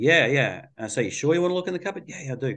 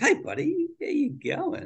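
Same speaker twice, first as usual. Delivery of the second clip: very high, light, playful sing-song parent voice; 13 semitones higher, 4 dB quieter than usual. A parent showing how he talks to his child near the wall, in a playful voice. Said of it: "I'm going to use my playful voice".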